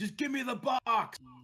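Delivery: shrill, high, loud yell through a mask. Voicing a masked character in a game, yelling through a mask. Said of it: "he just yells like through his mask".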